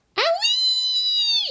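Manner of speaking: very high, long, drawn-out, piercing shriek. Narrator reads the hen right after it swallows the medicine, shrieking. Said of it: "shrieked the hen".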